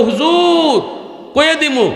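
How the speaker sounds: high, eager calling out, as from a distance.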